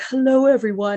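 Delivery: unsettling, creepy manner of speaking. Imitating a prophet greeting followers from prison: imitating Warren Jeffs's creepy voice. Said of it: "He's still all creepy voice".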